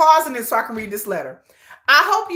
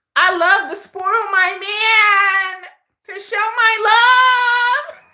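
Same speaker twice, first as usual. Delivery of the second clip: put-on woman's voice, higher; 8 semitones higher, 3 dB louder than usual. Reading a woman's letter aloud to the audience, put-on woman's voice. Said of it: "that woman don't sound like that".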